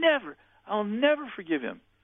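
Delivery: very high-pitched, shrill yelling. Retelling how a tormented woman refused to forgive: imitating a woman yelling. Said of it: "She started yelling".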